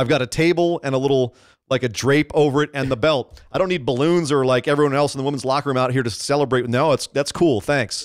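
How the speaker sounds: ordinary talk, nothing marked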